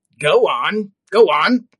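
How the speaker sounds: rasping voice, very loud. Narrator voicing the uncle urging his nephew Fred to continue, raspy voice. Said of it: "the raspy voice bid him".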